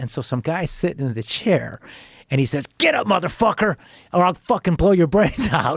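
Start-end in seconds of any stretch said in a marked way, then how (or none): 2.8-5.8 high-pitched, furious screaming. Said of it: "screaming "motherfucker"".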